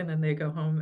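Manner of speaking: ordinary delivery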